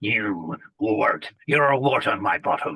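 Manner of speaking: low, cruel, evil, sadistic villain voice. Showing off a range of character voices, an evil, sadistic voice. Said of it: "evil, sadistic".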